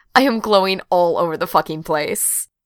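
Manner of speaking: ordinary delivery, nothing marked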